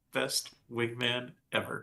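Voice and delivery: hushed, soft whisper under the breath. Speaking in character after a vampire is freed: whispering under breath. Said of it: "and whisper under my breath".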